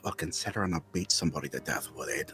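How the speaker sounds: dropped quiet voice. He looks around before speaking, in a lowered voice. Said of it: "and lowers his voice".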